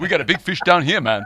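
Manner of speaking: put-on loud, high-pitched, strong Caribbean accent. Imitating an actor's line from Jaws four: Mario Van Peebles Caribbean accent. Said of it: "he sounded to me like Mario Van Peebles from Jaws four".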